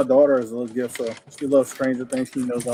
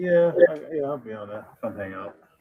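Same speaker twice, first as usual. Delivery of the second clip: tired, low-energy, unexcited, unenthused delivery. Answering whether joining the auction show tonight, sounding unexcited. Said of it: "Don't sound too excited".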